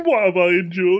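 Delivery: speaking through laughter. Retelling how a character walks off laughing, imitating laughing speech. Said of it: "goes away laughing and goes".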